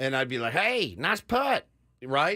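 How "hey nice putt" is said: put-on, pitched-up corn pone hillbilly voice. Recalling imitating their buddy on the air: Foster's hillbilly voice. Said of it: "our buddy Foster's hillbilly voice".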